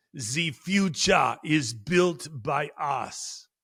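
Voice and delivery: put-on drawn-out, slow German accent. Retelling a forum speech, quoting the speaker: Schwab German accent. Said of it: "with his German accent and shaking his fist".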